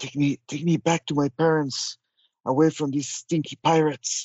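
hushed, whispered voice. Carried into the dark by a flying creature, whispering to it. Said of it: "I will whisper to it".

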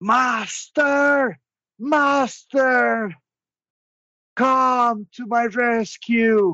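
very high, very slow, drawn-out scream. Voicing Cheetle calling to his master for rescue: Cheetle screaming. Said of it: "he screams".

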